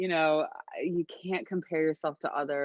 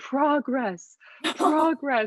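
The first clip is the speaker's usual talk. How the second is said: mock very high, very loud, frantic, shrill, desperate screaming; 10 semitones higher, 5 dB louder than usual. Recalling labor, she acts out screaming at her midwife, reenacting her own screaming. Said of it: "And I just started screaming".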